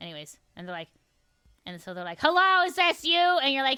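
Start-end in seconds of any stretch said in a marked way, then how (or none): 2.2-3.2 mock cranky, impatient, high, loud irritated voice. Acting out a nurse answering the phone: imitating an annoyed nurse. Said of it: "They're always, like, mad".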